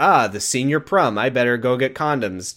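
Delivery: ordinary delivery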